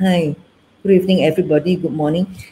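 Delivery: flat, passionless, unenthusiastic voice. Showing an audience how a greeting sounds without passion, flat and passionless. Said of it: "there's no passion in my voice".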